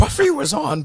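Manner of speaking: squeaky, very high cartoonish caricature voice. Recalling a school buddy's habitual announcement, imitating Mike's voice. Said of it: "that's what he sounded like".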